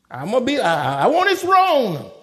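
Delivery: loud, high, arrogant, boastful voice.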